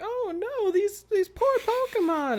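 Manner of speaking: very high-pitched cartoon nurse voice. Imagining a nurse at the Pokemon Center seeing hurt Pokemon, Nurse Joy voice. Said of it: "That's a good Nurse Joy voice".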